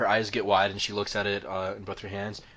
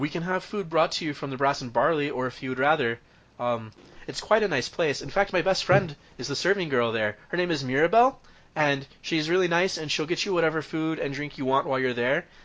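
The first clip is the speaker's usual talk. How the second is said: high, squeaky, slightly nervous voice; 7 semitones higher, 4 dB louder than usual. Voicing a gnome answering a player about food and drink: Petunia's high-pitched squeaky voice. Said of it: "a high-pitched, kind of squeaky voice".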